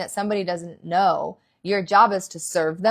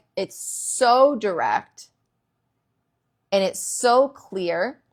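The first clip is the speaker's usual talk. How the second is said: slow, deliberate, overly direct talking-down voice. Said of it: "it's that same voice".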